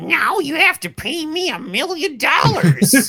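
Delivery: very high, drawn-out, slow voice of a greedy villain. Mocking a friend who won't give up a game: imitating Jordan as a greedy villain. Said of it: "what happened to Jordan's voice?".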